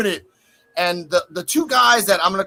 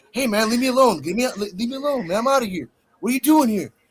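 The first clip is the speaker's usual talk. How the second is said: play-acted, sincere, earnest, heartfelt tone; 4 semitones higher than usual. Retelling Jensen telling the cameraman to leave him alone: imitating Jensen's sincere voice. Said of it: "the sincerity in his voice".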